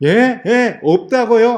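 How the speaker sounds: indignant, high-pitched and loud. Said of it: "하고 막 따져요".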